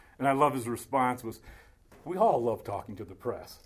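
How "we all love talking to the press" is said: very sarcastic, mocking, low, swooping tone. Retelling his reply as he faced the press, retelling a very sarcastic reply. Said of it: "very sarcastically".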